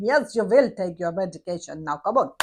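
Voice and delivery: very low, no-nonsense put-on Russian accent. Speaker recalls meaning business on the wards, using a put-on Russian accent. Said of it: "I'd come out with this Russian accent".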